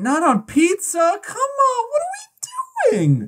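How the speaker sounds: very high-pitched, swooping, upset protesting voice. Podcast host reacting to the other host's food choice, in a high upset voice. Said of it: "using my high voice now".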